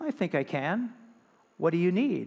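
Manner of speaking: steady, calm, low, deep, unhurried voice. In a joke, a voice from above answers a man asking for help; put-on calm deep voice. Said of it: "And the voice said".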